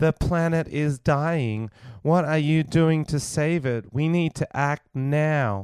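slow, mechanical computer robot voice. Describing a climate message shown on screen at a concert: robot voice. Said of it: "a woman in a robot voice going".

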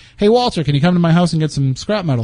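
ordinary talk, nothing marked

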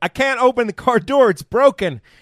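very high-pitched, drawn-out shouting. Speaker retelling how the suspects yelled in front of the officers: retelling a yell. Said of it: "They were literally yelling like".

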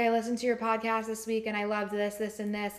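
normal talking voice

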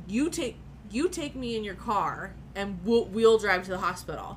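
ordinary delivery

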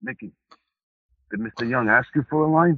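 ice-cool, calm tough-guy voice. Retelling what an actor said to him on set: Chaz Palminteri voice. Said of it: "very Chaz, he goes".

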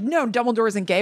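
normal talking voice

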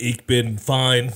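German robot voice, loud. Asked by the host how he is, in a robotic German-accented voice. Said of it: "That was like my German robot".

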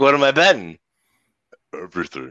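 eerie, steely, creepy deep voice, dropped low. Describing a film's coin-flip scene, quote the character in a creepy deep voice. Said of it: "he's got that creepy deep voice".

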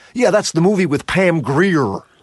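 put-on overdone American accent, heavy R's. Quoting a Reservoir Dogs line, in Tim Roth's bad American accent. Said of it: "the standard bad American accent was they'd push the R too much".

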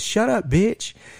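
very high, jokingly rude, sarcastic acted-out yell. Retelling how someone jokingly yelled at a woman and broke the mood, retelling a sarcastic yell. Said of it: "he just looks at Courtney and yells at her and he goes".

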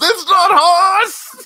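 very high, shrill, loud, drawn-out scream. Retelling a movie scene where a guy sees through a disguise: imitating a scream. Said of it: "He screams".

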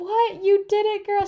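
mock very high, loud, gushing hyped cheering. Telling of her final stretch on the track as a woman cheers: retelling hyped-up cheering. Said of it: "just so hyping it up so much".

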